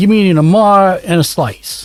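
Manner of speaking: put-on New York accent. Joking about ordering food: new york accent. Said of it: "Suddenly I'm from New York over here".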